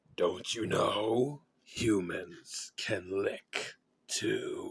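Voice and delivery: creepy, scratchy, rasping, low-pitched whisper. Reading a story: he stands up in the dark and speaks in a scratchy, low whisper. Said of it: "he whispered to her in a scratchy, low voice".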